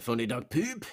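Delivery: put-on French Canadian accent. Reading a chat message aloud for a joke: put-on French Canadian accent. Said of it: "That's definitely French Canadian, the way you said that".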